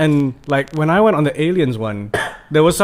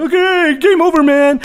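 very high, very bad, faked American accent; 13 semitones higher, 5 dB louder than usual. Speaker mimics a British guy voicing a Marine, very bad American accent. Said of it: "a very bad American accent".

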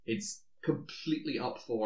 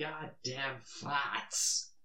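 terrible put-on Boston accent; 3 semitones higher, 4 dB quieter than usual. Quoting a favorite line from a movie, in a bad Boston accent. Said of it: "My accent's probably terrible".

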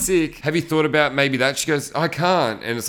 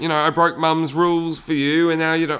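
put-on English accent, slower; 2 semitones higher than usual. Retelling what a guy said to a girl, in a put-on English accent. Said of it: "I don't know why I'm doing that voice".

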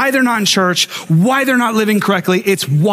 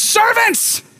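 mild to loud put-on proclaiming yell; 14 semitones higher than usual. Retelling how the father greets his returning son: imitating a father screaming loudly. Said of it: "screams at the top of his lungs".

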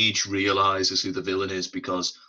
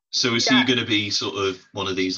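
ordinary talk

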